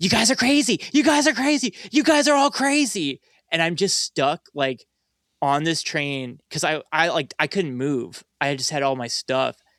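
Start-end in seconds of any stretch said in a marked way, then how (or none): 0.0-3.2 play-acted very high, screamed ranting voice. Retelling a man in a gas mask on the subway: imitating a man screaming. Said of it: "he's just screaming".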